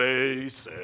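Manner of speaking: deep, dragging, very low, drawn-out voice. Teaching levels of saying a word, demonstrating the basic level in a low, drawn-out voice. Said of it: "[low, drawn out voice]".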